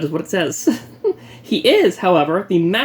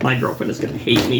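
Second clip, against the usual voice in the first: usual speaking voice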